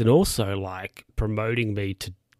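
plain

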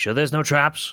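rapid, hurried, high-pitched rattled-off speech. In a tabletop game, a player speaks in character, very quickly. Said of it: "I say very quickly".

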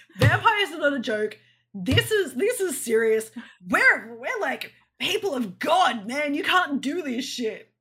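loud, slow, mock-serious preaching voice.

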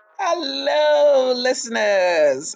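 very high, hoarse, raspy, groggy voice, drawn out. Podcast host greets listeners, raspy just-woke-up voice. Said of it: "my voice sounds so raspy. I think I just woke up".

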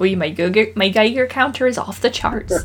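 put-on English Cornish accent. Imitating a man discussed on a podcast, in a West Country accent. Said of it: "you did a good accent on a podcast".

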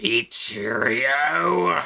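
angry, growled delivery. Reading a story aloud, a villain realizing he's betrayed: growled. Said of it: "Kevin growled".

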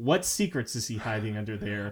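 ordinary talk

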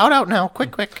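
very high, shrill, loud orc-woman voice. Voicing an orc woman hurrying a player out of the shop: orc woman voice. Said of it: "there is an orc woman standing behind the bar".

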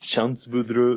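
fake put-on French-Canadian accent. Discussing Hard Target, saying the main character's name in a fake French-Canadian accent. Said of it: "my fucking French-Canadian accent".

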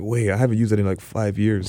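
ordinary talk

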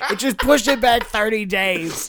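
loud put-on New York accent. Playing a husband in a comic bit about a missed anniversary, New York accent. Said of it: "devolve into like a New York accent".

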